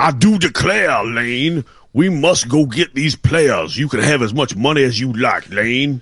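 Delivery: high, put-on Louisiana Cajun accent, laid on. Doing an interpretation of the other speaker's voice, addressing Lane, in a Cajun accent voice. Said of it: "your Cajun accent voice".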